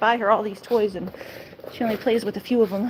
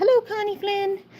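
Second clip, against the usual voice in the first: very high-pitched put-on dog voice; 10 semitones higher than usual. Voicing the pet husky greeting a stream viewer: voicing the dog. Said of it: "She says".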